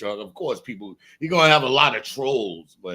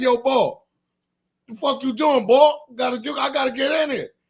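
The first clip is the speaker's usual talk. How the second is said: loud, fake Philadelphia street accent; 13 semitones higher, 3 dB louder than usual. Describing how you'll talk when you go down there, using a put-on philly accent. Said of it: "I'm a step my Philly accent".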